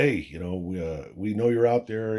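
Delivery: put-on shouting, halting and stumbling a little. Retelling shouting into the dark at unseen footsteps: retelling a yell. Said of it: "I start yelling".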